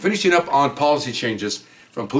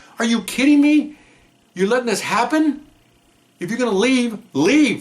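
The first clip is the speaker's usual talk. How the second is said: mock loud shouting, yelling; 9 semitones higher than usual. Retelling watching a police pursuit on TV, retelling screaming at the TV. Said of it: "I'm screaming at the television".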